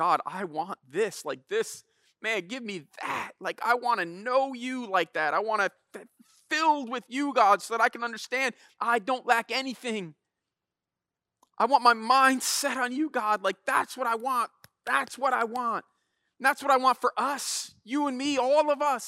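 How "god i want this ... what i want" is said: put-on, high, tearful, weeping voice crying out. Retelling a prayer cried out to God in the office, reenacting a weeping prayer. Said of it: "just crying out to God".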